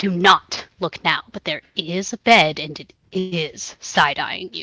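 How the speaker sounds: most urgent voice possible. Playing a character warning a friend about a bed: most urgent voice. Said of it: "in the most urgent voice I can".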